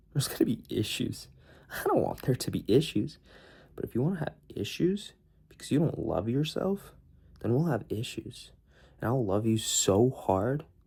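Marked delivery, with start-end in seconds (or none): 10.0-10.6 heavy emphasis placed on "hard". Telling a listener how things go if they don't love themselves, stress on 'hard'. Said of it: "Emphasis on hard".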